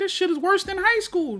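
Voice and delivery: exasperated high-pitched burst.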